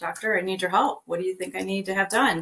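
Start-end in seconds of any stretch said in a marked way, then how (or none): none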